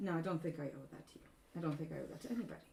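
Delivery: flat and unbothered. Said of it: "she just deadpans at you and goes".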